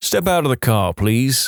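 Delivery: ordinary delivery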